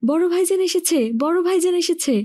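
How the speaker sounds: frightful shriek. Hearing a man laugh in the dark, someone cries out, shrieking in a frightful voice. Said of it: "বিকট স্বরে চেঁচিয়ে উঠল".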